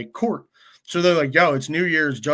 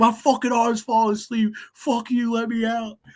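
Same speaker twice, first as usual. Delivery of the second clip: mock full-on, high-pitched hollering; 9 semitones higher than usual. Retelling being hung up on a wall by his arm, retelling his yelling. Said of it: "So then I'm yelling even more".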